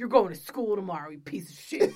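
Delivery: put-on loud, angry, scolding voice. Retelling a film scene where the parent scolds the child: imitating an angry parent. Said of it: "How are you so angry at your child already?".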